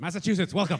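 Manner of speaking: shrill, loud talk-show host voice. Opening the show with a joke impression: Larry King voice. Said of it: "that was my Larry King impression".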